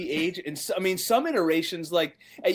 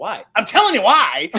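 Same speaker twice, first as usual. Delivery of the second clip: put-on angry voice, higher and louder; 3 semitones higher, 9 dB louder than usual. Quoting a favorite line from a movie: imitating angry Mickey Rooney. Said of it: "He's, like, so pissed off".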